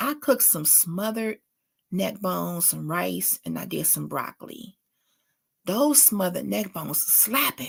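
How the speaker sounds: low, hushed half-whisper under the breath. Talking to the audience while alone in the room, half-whispering. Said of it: "I don't know why I'm whispering".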